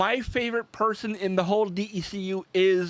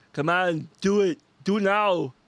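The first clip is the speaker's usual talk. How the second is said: bad put-on Austrian accent. Quoting Mister Freeze lines in a really terrible Schwarzenegger accent. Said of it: "my really terrible accent of, uh, Schwarzenegger".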